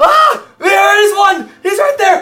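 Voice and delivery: screaming wizard character voice. Narrating a game scene as the wizard who spots Lou, screaming out. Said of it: "he screams out when he sees Lou".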